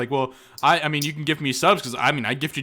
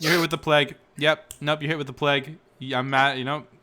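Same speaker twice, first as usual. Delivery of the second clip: plain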